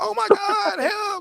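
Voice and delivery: acted-out frantic, panicked voice. Acting out how someone sounds when someone is trying to kill them, mock-frantic panic. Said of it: "You sound frantic".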